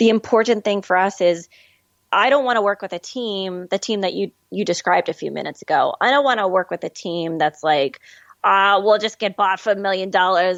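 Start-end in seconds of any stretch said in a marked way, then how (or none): 8.8-10.6 sudden put-on Boston accent. Speaker describes a team they don't want to work with, in a sudden Boston accent. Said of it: "I don't know why I'm trying to use this Boston accent all of a sudden".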